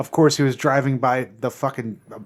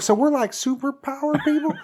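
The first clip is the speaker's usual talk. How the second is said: put-on Texas accent, pitched way up; 13 semitones higher than usual. Retelling what a kid in a movie asks his father: put-on texas accent. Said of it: "that's my Texas accent".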